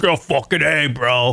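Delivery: mocking, sarcastic put-on bro voice. Mocking the way douchebags say it: sarcastic bro impression. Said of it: "it's like sarcasm".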